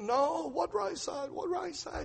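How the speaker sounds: put-on very high-pitched Lebanese-accented voice. Retelling a doctor's answer about which side was put to sleep, imitating Dr. Khalil's Lebanese accent. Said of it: "in his Lebanese accent".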